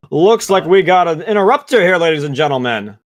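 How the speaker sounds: high, showy arena announcer patter. Voicing the announcer as the crowd boos a fighter: arena announcer voice. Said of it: "You hear the announcer".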